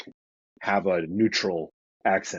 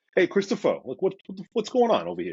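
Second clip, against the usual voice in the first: strong Brooklyn accent, very high and swooping; 11 semitones higher than usual. Showing how the speaker talks to a brother or dad, in a Brooklyn accent. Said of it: "I become a little bit more Brooklyn".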